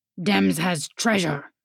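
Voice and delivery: deep, low grumbling voice. Narrating a story, voicing the second speaker's reply in a deeper grumble. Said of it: "the deeper grumble replied".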